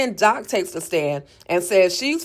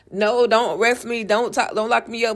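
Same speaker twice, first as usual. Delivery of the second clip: desperate, begging, pleading tone; 3 semitones higher than usual. Retelling a character's dream in a recap: acting out begging and pleading. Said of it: "begging and pleading".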